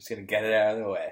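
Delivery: put-on actor's drawl. Retelling what was said at the Oscars: imitating Matthew McConaughey. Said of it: "He did that at the Oscars".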